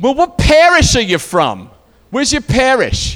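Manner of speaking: put-on high, loud, belted Boston accent. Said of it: "she's from Boston".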